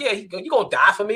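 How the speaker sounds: mock careless, dismissive, flippant, offhand throwaway delivery. Telling the listener how they said it, mock-flippant retelling. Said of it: "the way you said it was so flippant".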